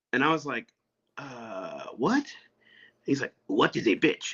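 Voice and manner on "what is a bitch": put-on heavy, gruff elderly voice. Retelling what a short old man asked them, gruff voice. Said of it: "kind of gruff voice".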